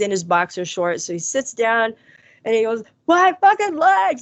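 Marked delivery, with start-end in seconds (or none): 3.1-4.2 mock scream of pain, much higher, louder. Recounting a man's cry when the speaker ran in, retelling a scream of pain. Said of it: "And he's screaming".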